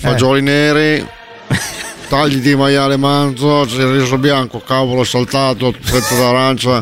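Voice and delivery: unhurried, mock Italian-accented voice.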